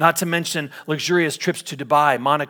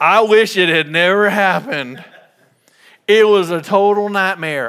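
raised, loud, rude put-on caricature voice; 4 semitones higher, 7 dB louder than usual. Telling of a lottery winner who fell into debt, quoting him in a William Bud Post impression. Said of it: "I think that's how he talked".

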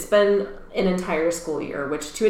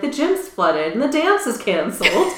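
offhand, totally unbothered, nonchalant, slightly high delivery; 5 semitones higher than usual. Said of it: "he says it so nonchalantly".

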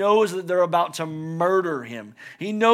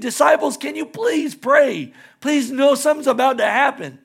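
acted-out begging, pleading voice; 7 semitones higher, 4 dB louder than usual. Speaker retelling him asking the sleeping disciples to pray: acting out begging. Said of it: "He's begging".

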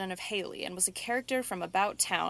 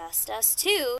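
hoarse, raspy, husky ghost-like voice; 4 semitones higher than usual. A ghostly voice speaks beside a man lying awake in a haunted house: hoarse, ghostly voice. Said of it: "sounded a hoarse, ghostly voice".

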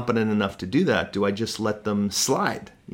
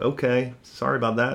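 mock flippant, offhand tone. Imitating a person who apologized without caring: imitating a flippant apology. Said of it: "the flippancy of that".

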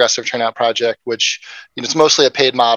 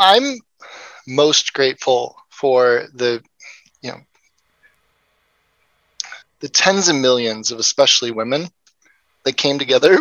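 choked-up voice, slower pace. Asked what they are grateful for before the interview ends, answering choked up. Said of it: "I get choked up".

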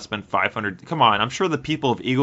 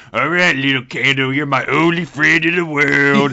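put-on acted drunk talk, higher and louder; 5 semitones higher, 7 dB louder than usual. Pretending to be drunk while talking to a candle: pretend drunk talk. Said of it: "hammered, be like".

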